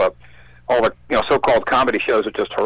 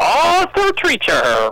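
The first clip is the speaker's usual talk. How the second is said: put-on cranky old British voice, pitched much higher. Recalling how he said his name in the commercials, cranky British Arthur Treacher voice. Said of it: "he kind of sounded like a cranky British guy where he would go".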